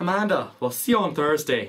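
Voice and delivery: put-on Irish accent. Signing off the episode, Irish accent. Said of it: "I'll do it in an Irish accent".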